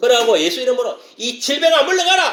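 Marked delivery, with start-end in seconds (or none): 1.2-2.3 high, slow, commanding, stern cry. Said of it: "그걸 외치면 되는 거예요".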